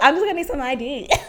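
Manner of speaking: sweet, cute, cutesy tone. Showing how to ask a guy near the DJ section for ID, in a cute tone. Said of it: "You gotta say with like a cute tone".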